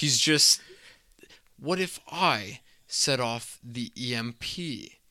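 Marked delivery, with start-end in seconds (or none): 1.6-4.9 very slow, precise enunciation of every word. Retelling a movie scene, quoting a character who sounds like Agent Smith. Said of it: "the perfect impression of Hugo Weaving's Agent Smith".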